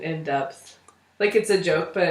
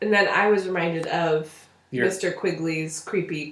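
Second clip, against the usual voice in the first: ordinary delivery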